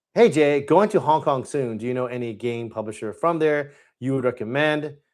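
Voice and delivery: ordinary delivery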